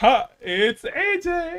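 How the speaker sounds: mock teary, tearful tone.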